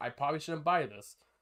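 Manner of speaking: ordinary talk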